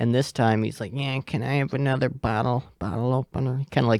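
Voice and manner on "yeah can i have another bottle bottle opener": put-on slurred speech, much quieter. Retelling how a man asked for another bottle opener, imitating super quiet slurred talk. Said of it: "talks just like super quiet and with the slur".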